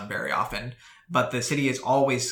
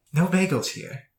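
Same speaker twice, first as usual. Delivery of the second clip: distant, high feminine voice calling out; 7 semitones higher, 4 dB louder than usual. Voicing a half were beast figure calling from a distance: feminine voice calling out. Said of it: "this feminine voice call and say".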